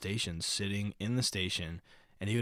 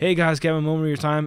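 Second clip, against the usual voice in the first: loud, high-pitched announcer-like voice; 8 semitones higher, 14 dB louder than usual. Imitating a subway storyteller asking riders for their time, imitating someone talking very loudly. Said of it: "talks as loud as he possibly can".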